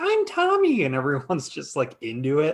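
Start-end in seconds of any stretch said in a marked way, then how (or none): 0.0-0.8 put-on ghostly, very high little child voice. Describing a lady who claims to speak for the dead, in a little child voice. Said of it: "acting like she's some little child from like the other side, and she talks in this like voice".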